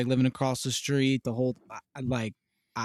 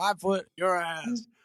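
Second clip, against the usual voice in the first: very slow, each word drawn out, pitched up; 6 semitones higher than usual. Quoting a favorite TV dad's catchphrase: Red Foreman impression. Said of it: "He's like".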